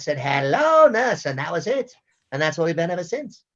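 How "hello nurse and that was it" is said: squeaky, high, loud helium-pitched little voice. Voicing a tiny cartoon character with helium added: high helium voice as John. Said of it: "I gave him some helium".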